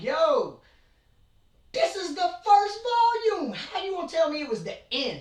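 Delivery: high, loud, outraged, cheated-sounding yell.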